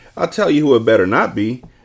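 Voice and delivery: ordinary delivery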